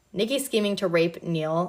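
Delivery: ordinary delivery, nothing marked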